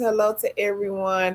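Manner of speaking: usual speaking voice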